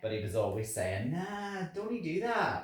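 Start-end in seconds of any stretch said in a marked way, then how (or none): 1.1-2.6 put-on Scottish accent, pitched higher. Retelling what a roommate from Scotland always said: imitating Josh, Scottish. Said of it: "from Scotland, Josh".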